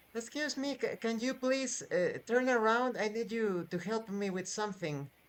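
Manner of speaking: put-on soft, high little boy voice. Voicing a child who asks a player to turn around: little boy voice. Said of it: "The voice of a little boy is heard".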